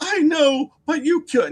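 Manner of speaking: very high, shrieking, sobbing, screaming wail. Retelling a man's reply about his dog in the snow, imitating screaming and crying. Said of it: "Now he's screaming and crying in the street".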